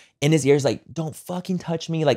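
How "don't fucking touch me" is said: play-acted heated, angry, lashing-out outburst. Retelling a fight at a venue, imitating someone going off angrily. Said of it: "literally kinda going off on the ex".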